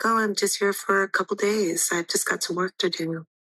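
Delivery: whispering voice. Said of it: "I start whispering".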